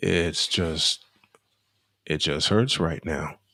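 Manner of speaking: very quiet, hushed, soft, subdued voice. A speaker apologizes to listeners for being quiet while hurting, speaking very quietly. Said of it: "I am so quiet".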